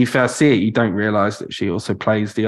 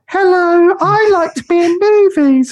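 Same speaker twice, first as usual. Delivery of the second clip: put-on very high, slow, loud childlike voice; 7 dB louder than usual. Imitating an actress's real interview voice: imitating Mia Goth's childlike voice. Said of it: "she speaks like she's twelve".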